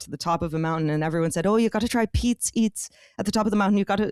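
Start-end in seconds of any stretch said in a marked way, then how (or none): 1.5-4.1 full, committed put-on Irish accent. Quoting what everyone said, in a full irish accent. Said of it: "I'm doing a full Irish accent".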